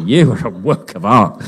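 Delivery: sarcastic spin in the delivery. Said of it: "saying it sarcastically".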